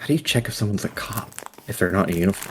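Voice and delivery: muttered under breath. Voicing a character who mutters a question: muttered under his breath. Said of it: "under his breath go like".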